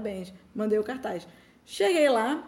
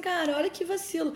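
put-on tearful crying, higher pitch; 6 semitones higher than usual. Retelling complaining to her mother about an injustice, imitating her past self crying. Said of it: "E aí eu cheguei e chorando".

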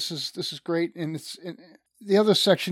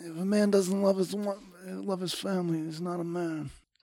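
put-on Italian mobster accent, much quieter; 6 dB quieter than usual. Speaker quotes Don Corleone while talking about men, doing a Don Corleone impression. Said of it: "That's a great accent".

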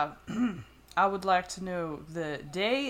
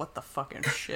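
mock muttering under breath, much quieter; 4 semitones lower, 5 dB quieter than usual. Retelling what a woman muttered as she walked away, imitating muttering under breath. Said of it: "muttering under her breath".

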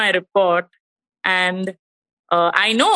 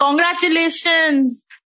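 mock, high-pitched shouting at full voice; 7 semitones higher than usual. Retelling a doctor's phone call with a report: imitating a doctor shouting. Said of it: "she shouted on top of her voice".

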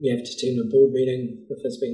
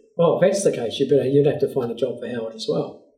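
put-on, quick, offhand, joking teasing tone; 3 dB louder than usual. Telling how the speaker's wife answered jokingly, retelling a joking remark. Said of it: "She just jokingly said".

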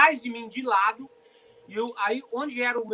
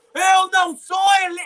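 very loud, high, full-throated yell; 8 semitones higher, 9 dB louder than usual. Retelling an argument with a man: retelling a shout. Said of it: "nunca vi me gritando daquele jeito".

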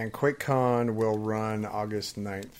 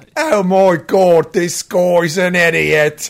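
fake British accent, very loud and very slow; 6 semitones higher, 12 dB louder than usual. Imitating British listeners laughing at the speaker: fake British accent. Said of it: "Ignore our fake accents".

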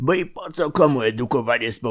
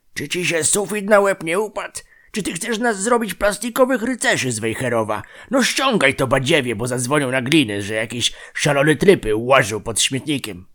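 ordinary delivery

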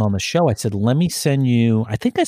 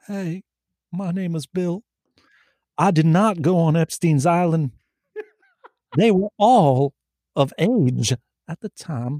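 put-on voice with the pitch lifted high; 6 semitones higher than usual. Answering a request to do Bill Clinton: Bill Clinton voice. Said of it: "I do Bill Clinton".

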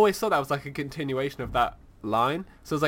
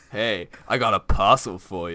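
mock porno-style delivery, lower pitched; 6 semitones lower than usual. Retelling how he reads a neighbour's message: imitating reading like a porno. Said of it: "reading it like a porno".

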